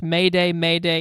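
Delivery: ordinary delivery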